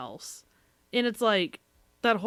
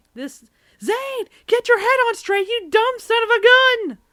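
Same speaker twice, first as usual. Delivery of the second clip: mock furious screaming, very high and very loud; 14 semitones higher, 8 dB louder than usual. Recounting watching a show, retelling angry screaming at the TV. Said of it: "I'm literally screaming at the T V".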